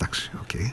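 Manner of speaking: very soft, hushed, secretive whisper. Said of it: "το λέω σιγά".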